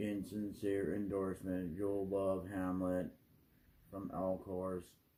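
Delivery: flat, level monotone, every word on one note. The speaker imitates how the Elcor from Mass Effect always talk, Elcor monotone voice. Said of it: "they always talk in this monotone voice".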